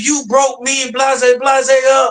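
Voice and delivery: acted, slow, drawn-out accusing screaming. Retelling how she came over the next day: imitating someone screaming. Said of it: "She came over there screaming".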